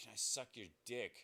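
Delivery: soft, hushed, secretive half-whisper. Retelling what she half-whispered over during the story: imitating a half-whisper. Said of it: "she fucking whispers over".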